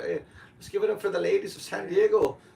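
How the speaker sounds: put-on Irish accent, very high. Opening a comedy show, greeting the crowd: put-on Irish accent. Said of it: "this Irish thing".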